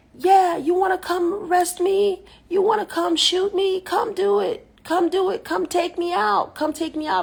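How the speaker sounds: very high, full-lung, top-of-the-lungs yell. Recounting a man on the floor below, the speaker imitates him yelling. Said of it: "the guy's just yelling at the top of his lungs".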